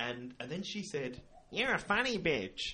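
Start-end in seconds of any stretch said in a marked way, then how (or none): 1.5-2.7 pitched-up woman's voice. Retelling a woman's remark to the speaker as they passed, mimicking her voice. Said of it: "In that kind of voice".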